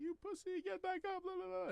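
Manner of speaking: very high, mocking, taunting tone.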